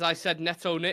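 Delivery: ordinary delivery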